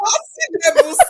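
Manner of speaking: high, laughing, joking delivery.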